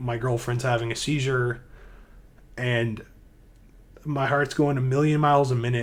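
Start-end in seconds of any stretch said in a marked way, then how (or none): none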